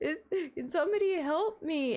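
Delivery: put-on defeated, hopeless voice. Retelling a call heard from across the hotel: imitating a defeated plea for help. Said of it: "basically giving up on asking for help".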